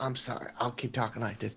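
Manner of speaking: speaking very quietly. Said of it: "if you could all just shh".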